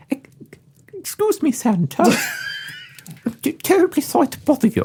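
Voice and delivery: put-on very high, sing-song Danish chipmunk accent. Voicing the elf Pepper addressing Santa: Danish chipmunk-like accent.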